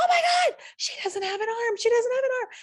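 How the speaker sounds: put-on very high, very loud, hysterical child-like shrieking. Telling a store story, acting out their young kids screaming about a woman. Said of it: "I hear my son screaming".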